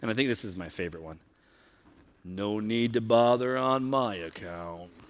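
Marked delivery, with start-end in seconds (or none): 2.2-4.9 slow, gloomy, drawn-out donkey voice. Reading out a favorite Eeyore quote aloud: Eeyore voice. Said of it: "I'll try to do his voice".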